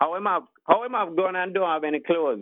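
put-on Jamaican patois accent. Repeating the drunk's line after being asked: imitating a jamaican patois accent. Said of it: "Can you please say that line once more?".

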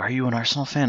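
imitated whisper. Retelling how two younger guys at the match asked him: imitating a whisper. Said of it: "they whispered to me".

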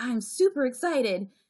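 hollow, forced, put-on enthusiasm. Retelling an answer to someone asking about excitement, imitating forced excitement. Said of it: "And I have to go".

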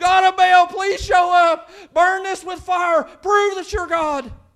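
mock high, loud, drawn-out crowd-like screaming. Telling a story where a crowd calls out to Baal: retelling a crowd's scream. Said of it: "they all begin to scream".

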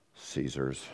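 sheepish, embarrassed, very quiet delivery. Acting out people answering Jesus' question, imitating a sheepish answer. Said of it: "They sheepishly answer Jesus' question of whose image it is. I think they say it in this tone of voice".

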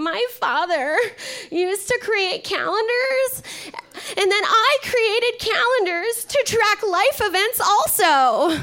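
acted very high, loud, tearful blubbering voice. Retelling what was heard, imitating Brett Kavanaugh crying. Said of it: "I hear Brett Kavanaugh crying".

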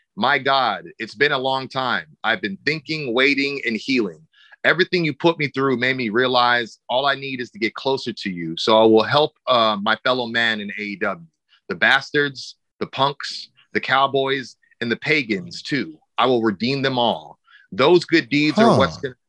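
ordinary talk, nothing marked

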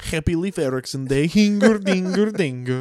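Viking-style accent. Told to talk about a game they played in a Viking accent. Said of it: "you have to talk about it in a Viking accent".

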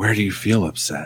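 soft, whispery, dreamy hippie-style voice. Speaker recalling a hippie-ish man's questions, imitating a hippie's whisper voice. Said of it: "he had this whisper voice".

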